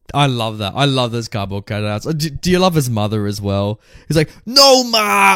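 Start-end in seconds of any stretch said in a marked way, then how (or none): 4.4-5.3 put-on, shrill, very high-pitched screaming. Retelling a film scene where a character yells at his mother: imitating a character screaming. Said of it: "He's just screaming at, like, nothing".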